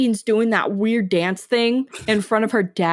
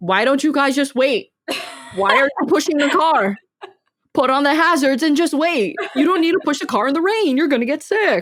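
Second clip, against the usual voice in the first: mock fussing, mild yelled-style complaining tone; 4 semitones higher than usual. Recalling everyone pushing the car in the rain, retelling their own yelling. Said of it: "I'm just yelling like".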